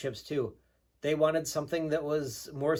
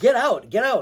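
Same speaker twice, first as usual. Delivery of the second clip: very loud, high-pitched shouting; 7 semitones higher, 12 dB louder than usual. Retelling insisting that someone get out of the van; retelling a yell. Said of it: "So I'm yelling".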